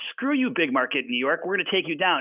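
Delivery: ordinary talk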